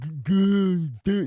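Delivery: put-on dopey voice, stammering, tripping over a word. Imitating people who argue with him: put-on mocking dumb voice.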